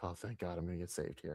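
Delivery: very quiet, hushed, thankful, relieved sigh. Voicing what a woman in a clip seemed to think: imitating relief. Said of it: "she was just like".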